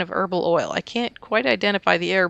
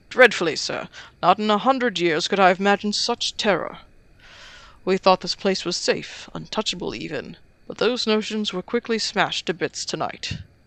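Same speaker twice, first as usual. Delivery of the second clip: fake British accent throughout. Voicing a compound staff manager greeting a detective: put-on british accent. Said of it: "I'll just make him British".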